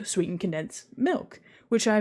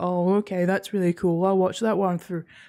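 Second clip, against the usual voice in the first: mock vacant, empty-headed mindless goblin voice. Imitating people scrolling videos aimlessly: imitating a mindless, empty-headed scroller. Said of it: "kind of goblin-like, no thoughts, head empty".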